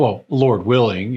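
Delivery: acted out, dripping, pointed, heavily sarcastic delivery. Recounting a professor's reply to a student's exam question, mimicking a sarcastic reply. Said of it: "very sarcastic to me".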